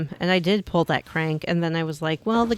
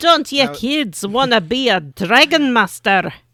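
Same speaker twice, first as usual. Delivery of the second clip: put-on Scottish brogue, pitch raised; 6 semitones higher, 6 dB louder than usual. Speaker retrying a quote after the first attempt sounded Irish, attempted Scottish brogue. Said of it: "Sure you can".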